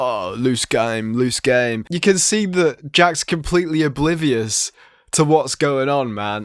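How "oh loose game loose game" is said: put-on whisper, lower pitch. Retelling what the person behind the camera whispers: imitating Ed Matthews whispering. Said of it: "whispering, like".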